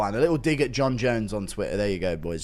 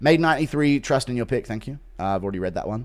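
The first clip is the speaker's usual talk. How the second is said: ordinary talk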